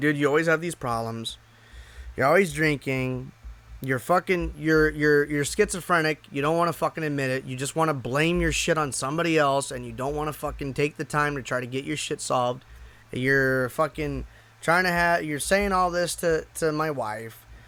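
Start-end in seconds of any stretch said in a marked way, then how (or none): none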